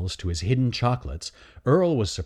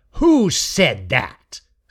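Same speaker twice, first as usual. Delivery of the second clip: loud, threatening snarl; 4 semitones higher, 6 dB louder than usual. Reading a story aloud, a character demands to know who spoke: snarling. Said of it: "Snarled Raker".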